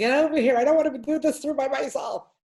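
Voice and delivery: high-pitched and loud, carrying voice.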